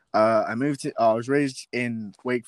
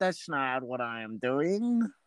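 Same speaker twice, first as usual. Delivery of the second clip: put-on slow, soft Nebraska accent. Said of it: "That's my Nebraska accent".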